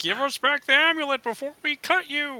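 silly, high-pitched, froggy, comically menacing creature voice. Playing a Grung character in an actual-play game, Kermit-like frog voice. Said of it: "[name] the Grung here, / And it is totally a blue and orange Kermit. / I gotta kill [name]".

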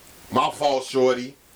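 attempted put-on New York accent. A man apologizes after being told off, in an attempted New York accent. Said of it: "did he just try to pull off a New York accent?".

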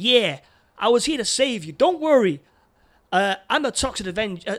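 put-on proper American accent, high and loud. Describing a film, the speaker voices the Toxic Avenger in a proper American accent. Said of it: "this like proper American".

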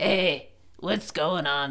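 soft, slow, drawn-out trashy alien voice. Imagining a trashy alien, how it would talk: trashy alien voice. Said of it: "so that's what it would sound like".

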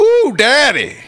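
very high, showy, put-on exclaiming. Joking about biting a corn dog at the fair: mock exclaiming. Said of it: "you're gonna exclaim".

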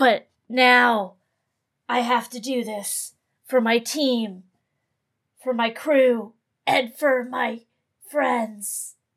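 over-the-top brooding voice, brooding on every word. Craven reaches for the spoons to play an instrument, brooding Craven voice. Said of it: "You're so brooding. Your character's so brooding. / he's got like a".

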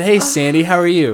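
charming, polite gentleman voice. Retelling how he greeted a mom by name, putting on gentlemanly charm. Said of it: "I'm being a fucking gentleman tonight".

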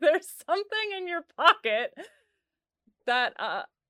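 loud, slow, flustered, pushing through giggles.

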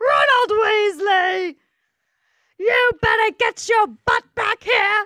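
screaming, very high and loud. Recalling the Harry Potter scene where Ron gets one, imitating the screaming letter. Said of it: "gets a screaming letter that's like".

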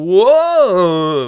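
loud, high-pitched, startled whoa. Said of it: "Dolph Lundgren being like".

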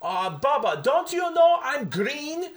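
put-on French accent. Retelling what Sylvain said after a messed-up spot, in Sylvain's French accent. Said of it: "in his French accent".

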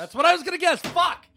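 very loud, shrill, high-pitched yelling outburst. Learning the answer was the guess they meant to make, yelling. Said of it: "Why are you yelling?".

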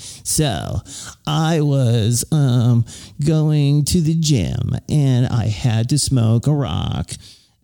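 annoying, obnoxious put-on Beverly Hills accent. Describing how an author reads his own audiobook, mimicking his douchey Beverly Hills accent. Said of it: "like douchey Beverly Hills kind of like accent".

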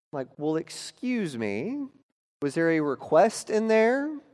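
normal talking voice

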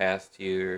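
ordinary delivery

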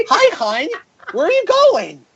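very high, sing-song suburban soccer mom voice. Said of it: "think of the most like whitest soccer mom you can think of".

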